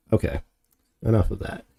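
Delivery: ordinary delivery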